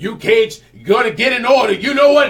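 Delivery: tough-talking cop voice, loud, high, lecturing. Retelling a teacher scolding kids in class: Denzel Washington voice. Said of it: "he does sound like Denzel Washington if he were taking Training Day".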